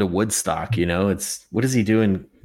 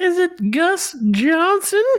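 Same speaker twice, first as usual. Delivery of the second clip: put-on sweet little-old-lady voice, very high; 3 dB louder than usual. A caller phones into the show doing a voice, sweet old lady voice. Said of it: "That's a sweet old lady".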